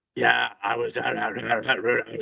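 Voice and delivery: very slow, creaky, rough chain-smoker rasp. Describing a sales rep who sounded like a heavy smoker: imitating a heavy smoker's voice. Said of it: "talking like this".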